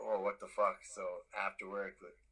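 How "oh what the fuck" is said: normal talking voice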